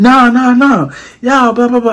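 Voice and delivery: high-pitched, mocking blah-blah rant. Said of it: "He's been like".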